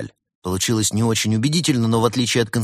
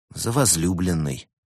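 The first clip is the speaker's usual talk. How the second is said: ordinary delivery, nothing marked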